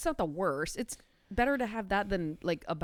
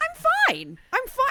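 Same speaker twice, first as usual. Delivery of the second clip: shrill, very high-pitched, loud squeaky voice; 10 dB louder than usual. Telling about a friend's text asking how they're doing: high-pitched Ross 'I'm fine'. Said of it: "I don't know why it's all high pitched".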